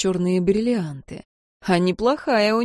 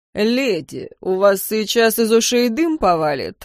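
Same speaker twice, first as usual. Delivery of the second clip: sneering, taunting, mocking tone. A vampire taunts an angry lady, mocking. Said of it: "насмешливо произнес вампир".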